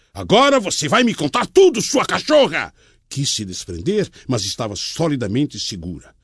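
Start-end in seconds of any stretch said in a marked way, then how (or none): 0.2-2.7 angry, insistent, growing rage, higher pitch. Gripping her by both arms as his anger grows, he demands: angry demand.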